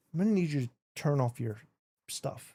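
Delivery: secretive, hushed stage half-whisper. Retelling a traffic stop, quoting the driver to the police officer, retelling a half-whisper. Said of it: "he whispers it".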